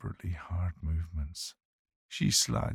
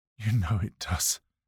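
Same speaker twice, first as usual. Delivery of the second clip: gasping, higher and louder; 4 semitones higher, 5 dB louder than usual. A man answers the woman teasing him, gasping. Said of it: "he gasps".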